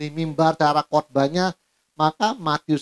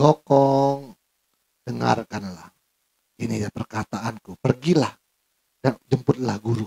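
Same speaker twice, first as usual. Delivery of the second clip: meek, gentle, low-pitched goddess voice; 4 semitones lower than usual. Acting out a line from a Dewi Kwan Im film: gentle Dewi Kwan Im voice. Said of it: "Perkataannya lemah lembut".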